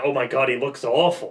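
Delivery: slow, unnatural, awkward and weirdly acted delivery. Repeating a line after calling its acting weird: imitating weird acting. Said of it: "the acting there was a little bit weird".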